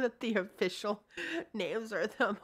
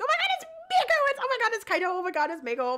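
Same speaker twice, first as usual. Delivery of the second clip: mock baby bawling, much higher, faster; 6 dB louder than usual. Picturing arriving there, acting out bawling like a baby. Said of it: "I'm gonna bawl like a little baby because I'm gonna be like".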